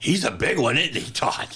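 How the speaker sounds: would-be secret tone that carries everywhere. A son retells his mother leaning over to comment, imitating Mary's loud whisper. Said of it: "she leaned over thinking she's whispering".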